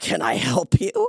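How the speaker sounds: loud, slow, drawn-out, disbelieving delivery. Retelling what the girl at the agency desk asked: imitating an incredulous question. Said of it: "the girl said incredulously".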